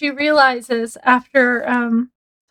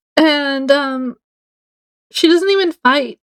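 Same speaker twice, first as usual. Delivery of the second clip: normal talking voice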